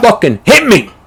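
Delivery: put-on high-pitched fighter yell. Retelling a fight where a fighter yells at his opponent: imitating Kimbo Slice yelling. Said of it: "And he yells at him".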